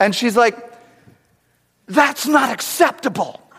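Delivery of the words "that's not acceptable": pitched-up half yell, half whisper. Retelling a stranger in a movie theater scolding: imitating a yell-whisper. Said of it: "the sound that you make when you're yelling and whispering at the same time".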